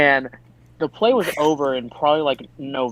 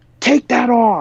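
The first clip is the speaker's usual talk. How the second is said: sudden, high, loud, barked yell; 9 semitones higher, 5 dB louder than usual. Retelling how a teacher yelled at a student in the morning: imitating Oz yelling loudly. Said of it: "he yells at me".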